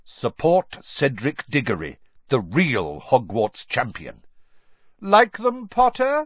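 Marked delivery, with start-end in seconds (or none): 5.0-6.3 raised voice pitched very high, loud. Narrator reads Malfoy speaking to Harry as he approaches: loud. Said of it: "Said Malfoy loudly".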